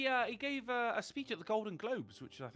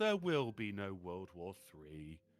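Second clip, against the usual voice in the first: mournful, sorrowful, slow and sad; 13 semitones lower than usual. Suggesting a headline be read with a changed tone: sad voice. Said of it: "like doing a sad voice".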